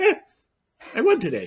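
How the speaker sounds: nonchalant, very high, sing-song, tossed off. Picturing the driver's first win: imitating Oscar Piastri, nonchalant. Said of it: "the most nonchalant winner".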